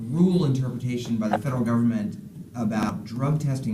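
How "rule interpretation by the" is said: ordinary delivery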